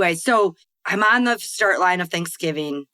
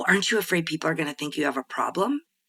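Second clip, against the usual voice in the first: mock gossipy whisper, quieter; 5 dB quieter than usual. Retelling a question someone asked, like gossiping ladies over tea: imitating someone whispering. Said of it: "it's almost like he whispered it".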